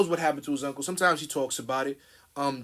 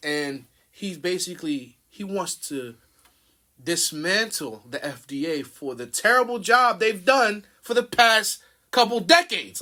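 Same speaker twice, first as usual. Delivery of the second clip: fired-up, indignant, heated, angry; 4 semitones higher, 4 dB louder than usual. Talking with someone who urges them to get fired up, getting angry. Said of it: "I'm sorry, I'm getting angry".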